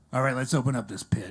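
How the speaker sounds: put-on death metal growl. Doing an impression for the audience: death metal veterinarian voice. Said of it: "my impression of a death metal veterinarian".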